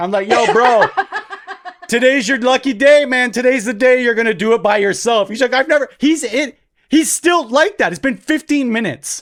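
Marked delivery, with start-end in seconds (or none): 0.3-5.3 mock hollered yell. Retelling calling to a kid from the top of the stairs: retelling yelling from upstairs. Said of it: "I'm like yelling from the top of the stairs".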